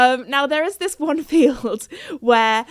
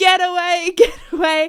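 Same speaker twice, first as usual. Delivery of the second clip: mock high, drawn-out, dragged-out shouting; 6 semitones higher, 3 dB louder than usual. Retelling a dad shouting at cows: imitating someone shouting. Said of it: "he was shouting at these cows".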